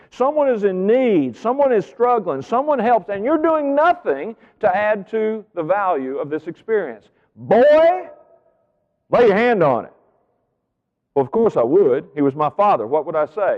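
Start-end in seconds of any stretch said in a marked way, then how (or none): 7.4-9.9 play-acted, biting, aggressive sarcastic tone, pitched up. Retelling the exact words a father said to his son: imitating an aggressive, sarcastic order. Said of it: "he said it aggressively and a bit sarcastically".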